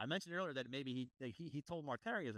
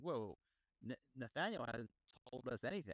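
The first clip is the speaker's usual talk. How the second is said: normal talking voice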